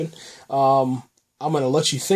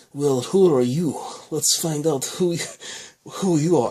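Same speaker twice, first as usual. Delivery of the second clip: put-on Russian accent with questioning rise; 3 semitones higher than usual. Retelling a man holding a gun to someone's head: Eulish in a Russian accent. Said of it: "that's my attempt at a uh, Russian accent".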